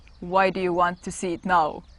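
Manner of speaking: grave, dead-serious, very deep voice. Retelling how Ram answered when confronted, imitating Ram's super serious deep voice. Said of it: "with this like super serious and deep voice".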